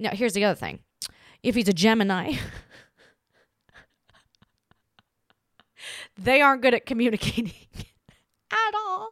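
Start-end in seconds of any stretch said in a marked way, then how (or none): 1.4-9.1 talking through laughter, higher. Giving dating advice about gemini men: laughing while talking. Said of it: "I'm laughing because".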